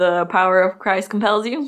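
plain

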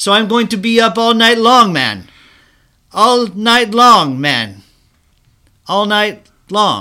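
fake, bad Jamaican accent. Retelling how a man spoke to his Jamaican doctor, in a bad Jamaican accent. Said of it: "How's my Jamaican accent?".

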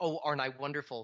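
plain

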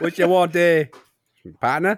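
put-on Australian accent. Riffing on accents with friends, the speaker slips into an Australian accent. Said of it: "Now he's Australian".

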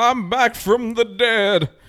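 very high, very slow, every word stretched. Retelling a cartoon scene about a return from the dead: Martin Luther King voice. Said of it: "he had the Martin Luther King voice".

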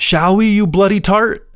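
put-on very high, unhurried, drawn-out yell. Retelling a defender's shouted reply from the walls: imitating someone yelling back. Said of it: "someone yells".

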